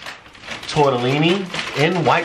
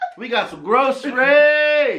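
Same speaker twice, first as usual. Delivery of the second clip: high, pitched-up yell, shouted; 8 semitones higher than usual. Showing the groceries to the camera, yelling. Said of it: "Why are you yelling?".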